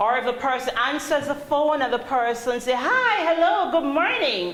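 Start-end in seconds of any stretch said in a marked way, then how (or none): 2.7-4.6 upbeat, happy-sounding, cheerful sing-song voice. Speaker shows Abigail how someone answering the phone can sound; cheerful phone greeting. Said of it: "wow, you're having a great day".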